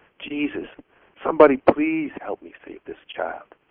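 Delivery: hushed whisper under the breath. A grandmother in the bathroom prays to save a child; whispered prayer. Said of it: "she whispered".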